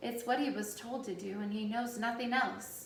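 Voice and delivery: ordinary delivery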